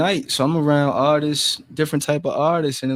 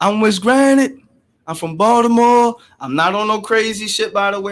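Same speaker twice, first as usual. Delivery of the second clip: loud speaking, pitched higher; 7 semitones higher, 5 dB louder than usual. Retelling pulling up and introducing oneself to people in line, talking loud. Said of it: "I know I'm talking loud and shit".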